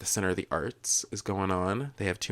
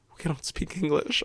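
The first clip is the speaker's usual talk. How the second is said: put-on muttering under breath, higher pitch; 10 semitones higher than usual. Retelling words said while walking away: imitating muttering under breath. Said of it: "under my breath".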